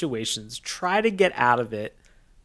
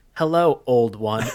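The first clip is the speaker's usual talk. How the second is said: flat robotic line delivery; 2 semitones lower than usual. Retelling a character greeting an elder: imitating a robotic delivery. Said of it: "it was said like a robot".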